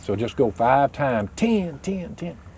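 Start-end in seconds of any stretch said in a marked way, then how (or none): 1.3-2.4 stress placed on the first "ten". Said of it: "And I'm accenting the first one".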